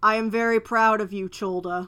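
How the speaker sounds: resounding, thunderous god voice. The Lord answers a player after a religion check, booming voice of the Lord. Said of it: "you hear this booming voice".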